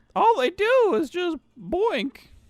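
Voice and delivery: squeaky, very high cartoon voice. Retelling what a character says about two others, in a Mickey Mouse voice. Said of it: "Why did you sound like Mickey Mouse".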